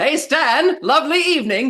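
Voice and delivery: friendly, neighborly yell, high and loud.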